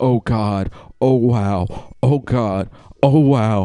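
dazed panicking, very slow and drawn out. Retelling hearing themselves on the ground: imitating panicked voice, not screaming. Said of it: "they weren't screaming, but they were panicking".

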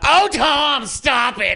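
very high-pitched, very slow, drawn-out drawl. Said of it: "the love child of [name] and [name]".

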